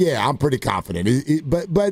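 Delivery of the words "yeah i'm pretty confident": offhand, casual, brushing-it-off dismissive tone. Quoting how he answered about being confident: mock-dismissive tone. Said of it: "the tone was sort of dismissive".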